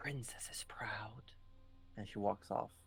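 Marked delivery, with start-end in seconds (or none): 0.0-1.3 whisper, much quieter. Game master voicing a character who hugs Rudy, then walks off; whispering. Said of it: "she whispers".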